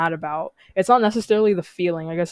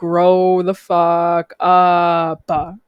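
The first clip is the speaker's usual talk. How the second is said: very slow, drawn-out, deliberate, raised voice; 5 dB louder than usual. Speaker repeats a phrase so some listeners could understand, slow and deliberate. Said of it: "I said it slowly".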